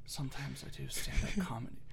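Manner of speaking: hushed whisper. Retelling what they told people earlier, speaker says the line whispered. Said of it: "You whispered it? ... yeah, I was like".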